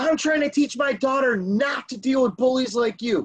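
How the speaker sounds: acted-out screaming, scaled down, mild and heated. Retelling what an angry driver screamed: imitating someone screaming. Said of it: "As he's screaming".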